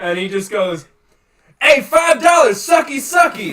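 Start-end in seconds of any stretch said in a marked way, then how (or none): 1.6-3.5 loud, high, very shrill hollering. Retelling a line shouted out of a car window: imitating someone yelling. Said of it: "just yelled that out of my fucking car window".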